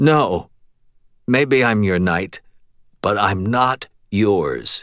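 ordinary delivery, nothing marked

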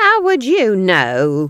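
very loud, sharp, drawn-out, swooping pitch snap. Nanny retorts to Granny during their argument, snapping. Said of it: "snapped Nanny".

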